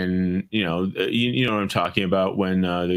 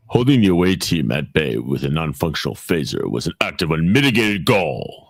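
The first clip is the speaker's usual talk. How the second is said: grand, dramatic storybook narrator voice; 2 semitones lower, 4 dB louder than usual. Quoting a line to the other speakers, in a narrator voice. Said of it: "you got a damn good narrator voice".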